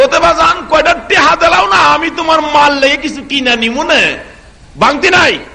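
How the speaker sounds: put-on high-pitched pleading, like a young boy.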